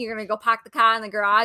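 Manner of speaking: heavy, hardcore put-on New England accent. Talking about regional accents, demonstrating a hardcore new england accent. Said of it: "New England accent".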